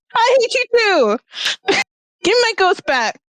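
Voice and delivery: shouting. Voicing a character jumping in to answer: yelling. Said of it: "she's yelling".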